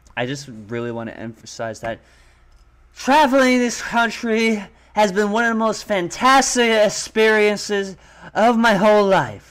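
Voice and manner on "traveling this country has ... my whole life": play-acted winded, breathless, high, drawn-out delivery. Imitating a candidate on video who sounds out of breath: imitating out-of-breath speaking. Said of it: "He sounds more out of breath".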